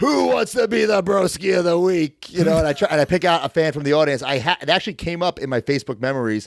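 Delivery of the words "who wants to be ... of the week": slow, rough wrestling villain voice working a crowd. Retelling own promo line to a live event crowd: imitating own heel promo delivery. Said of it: "he said I said it like such a heel".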